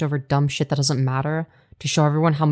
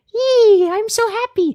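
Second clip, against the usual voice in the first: put-on cheerful voice, very high and very slow; 6 dB louder than usual. Showing for a joke how they sound when happy: mock happy voice. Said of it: "this is me when I'm happy".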